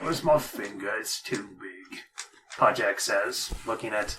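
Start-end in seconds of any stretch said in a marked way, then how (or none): 0.0-2.0 soft, cute, creature-like voice. Narrating a game scene and giving a character's line, in Podjack voice. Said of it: "I can't believe you have Podjack's voice now on".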